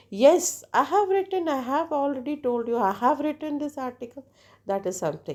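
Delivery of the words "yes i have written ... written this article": high, loud emphatic stress on have. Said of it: "If I say".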